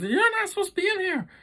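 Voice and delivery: very high, shrill, aggressive yell. Speaker retells a girl yelling at kids in a back room, retelling someone yelling. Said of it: "yelling at us because".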